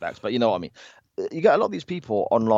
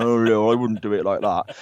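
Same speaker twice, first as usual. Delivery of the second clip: scoffing, mocking, put-down armchair-critic voice. Mocking online critics sitting shirtless in a basement: mocking imitation of armchair fans.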